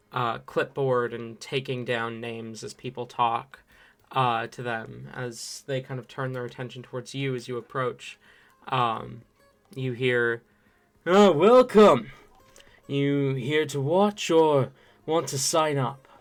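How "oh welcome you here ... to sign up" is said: echoing muffled masked voice, louder. A masked figure with a clipboard greets people as they approach, in an echoing voice beneath a mask. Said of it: "The voice kind of echoes beneath the mask".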